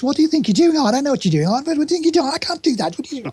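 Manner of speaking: very high Brummie accent, rattled off fast. Showing how someone from Wolverhampton speaks, Roy's Brummie accent. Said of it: "So Roy speaks a bit like this".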